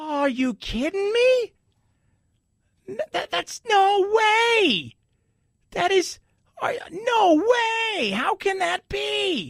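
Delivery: exaggerated incredulous wail, high-pitched and slow.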